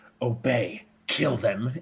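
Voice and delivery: muttered under breath. A storyteller voices Oculus speaking to a creature, under his breath. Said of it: "Just under his breath".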